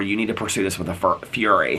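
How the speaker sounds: ordinary delivery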